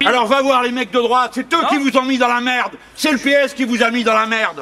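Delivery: loud high-pitched shouting.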